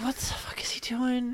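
soft, unvoiced whisper. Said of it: "there's some people like".

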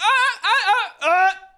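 drawn-out, very high, very loud howl of pain. Voicing a man struck in the ribs by a crowbar: yelling out in pain. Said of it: "he yells out in pain".

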